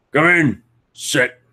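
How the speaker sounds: high voice, talking through a mouthful of food. A man chowing down on a haunch of meat welcomes a guest in; talking with mouth full. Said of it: "he's just chowing down into like some haunch".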